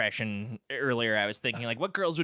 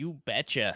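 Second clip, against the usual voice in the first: attempted Minnesota accent. Discussing actresses doing Minnesota accents, a co-host tries one: attempted Minnesota accent. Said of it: "That didn't sound Minnesotan".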